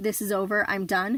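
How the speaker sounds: ordinary delivery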